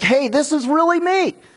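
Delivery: high-pitched shout.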